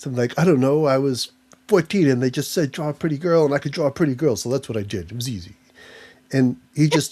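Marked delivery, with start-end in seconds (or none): 0.4-5.5 put-on New York accent. Retelling how Frank Frazetta talked about his artwork: imitating Frank Frazetta as a New York guy. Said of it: "he's such a New York guy".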